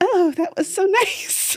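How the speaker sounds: very high, squeaky, uncomfortable-sounding voice. Imitating how the listener answers compliments, mimicking a high-pitched reply. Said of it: "you always go high pitch".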